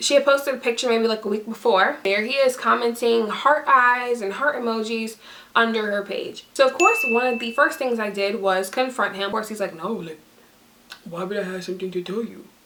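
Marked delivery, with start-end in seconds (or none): 9.7-12.5 half-hearted, weak attempt at a deep put-on voice. Retelling his reply when confronted about the girl: attempted deep voice imitating him. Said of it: "my voice didn't go very deep".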